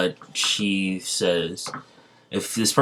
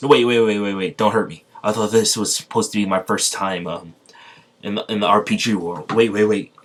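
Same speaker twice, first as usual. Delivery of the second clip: plain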